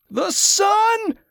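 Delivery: very high, pained scream. Teska, pushed up on the litter despite his pain, screaming in pain. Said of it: "more of a scream than a shout".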